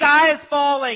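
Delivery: very loud, high, bold, confident proclamation. Showing how a falsehood is proclaimed to convince people: loud and confident. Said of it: "I was loud. I said it with confidence".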